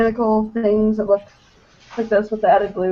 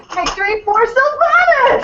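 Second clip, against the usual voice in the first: voice shot up very high; 3 dB louder than usual. Doing an impression of a friend's shout on request: Zach impression, three octaves higher. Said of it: "do your best Zach impression of Victory".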